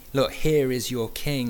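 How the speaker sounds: ordinary delivery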